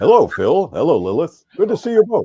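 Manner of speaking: very high, loud, booming radio-host announcer voice. Speaker demonstrates greeting two people in his announcer voice. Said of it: "I could always speak in my announcer voice".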